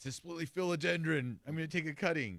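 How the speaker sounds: high, loud excited gasp, gushing and thrilled.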